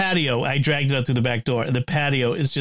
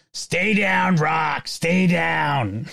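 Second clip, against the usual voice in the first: very slow, dragged out, leaning long on down; 2 semitones higher than usual. Describing the end of Rocky with Rocky on the mat, a Burgess Meredith imitation. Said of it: "Doing my Burgess Meredith imitation".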